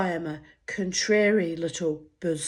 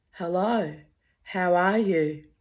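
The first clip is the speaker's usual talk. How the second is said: put-on dull flat monotone, barely raised. Retelling her phone call with Clary, greeting her back: retelling a flat monotone, slightly raised. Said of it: "raising monotone by one tiny decibel".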